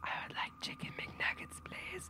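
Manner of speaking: very quiet, barely there, ghostly whisper. Reading a ghost story aloud, a voice from the closet: whispering. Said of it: "I hear a voice whisper".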